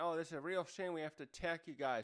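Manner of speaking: usual speaking voice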